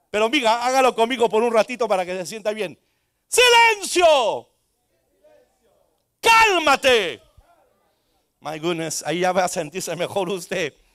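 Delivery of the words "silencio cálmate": high, swooping, authoritative preacher shout, commanding tone. Shouting along with the listeners at a problem: shouting with authority. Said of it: "cuando predico puedo gritar".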